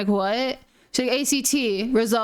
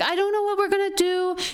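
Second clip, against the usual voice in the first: high, tearful, sobbing, crying voice; 8 semitones higher than usual. Retelling a friend who came up sobbing after the test: imitating someone sobbing. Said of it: "came up to me and started sobbing".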